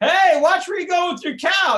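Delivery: very high-pitched, shrill shouting yell. Acting out an owner whose vessel a cow crushed: yelling. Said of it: "I start yelling".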